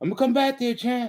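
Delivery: very high-pitched, hollering yell. Speaker retells a locker-room story, imitating Abdullah's high-pitched yell. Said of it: "Abdullah got this high pitched voice".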